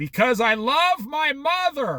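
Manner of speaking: mock earnest, deliberate, high, drawn-out proclaiming delivery. Retelling what he said to his mom in front of the cashiers, really loud. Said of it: "Really loud".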